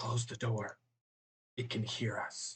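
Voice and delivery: quiet whisper in character. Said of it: "he's just in a very whisper voice".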